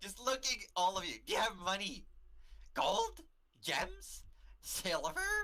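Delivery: high-pitched, tiny, wee goblin voice. Voicing a tiny goblin asking the travelers for money: tiny goblin voice. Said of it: "this tiny goblin comes up towards you".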